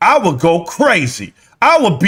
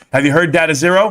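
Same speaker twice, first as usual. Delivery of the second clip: ordinary talk, nothing marked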